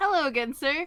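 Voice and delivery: bright, perky, loud voice. Acting out Leo greeting a customer: Leo voice, peppy customer service. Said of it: "in the ever so peppy perky customer service voice".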